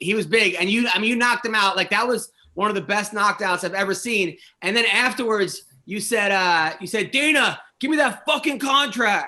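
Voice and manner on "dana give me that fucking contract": mock brash mild yell, pitched up. Retelling a fighter's demand to the new boss: imitating someone screaming.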